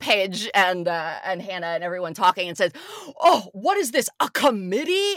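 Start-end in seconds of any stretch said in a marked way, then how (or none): 3.2-5.2 high, furious, play-acted fed-up yell. Retelling how Lindsay ran up to the group: imitating Lindsay yelling. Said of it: "just keeps yelling".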